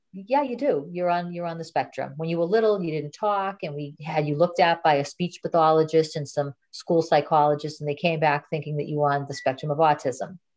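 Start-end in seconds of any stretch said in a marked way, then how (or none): none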